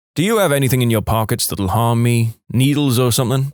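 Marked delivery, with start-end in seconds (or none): none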